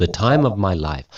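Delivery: ordinary talk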